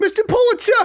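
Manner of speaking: New York newsie accent, very high. Talking about a favorite role to perform, the speaker does a new york newsie accent. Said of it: "Like that's my favorite voice".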